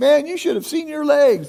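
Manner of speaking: loud, high, teasing called-out yell. Retelling a stranger's call from the crowd: imitating someone yelling. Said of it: "he yelled out".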